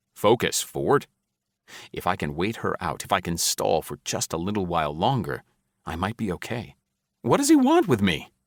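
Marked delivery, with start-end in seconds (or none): 7.2-8.3 very high voice, cracking and stumbling. The narrator, facing death and stalling for time, asks a question, voice cracking. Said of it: "my voice cracking".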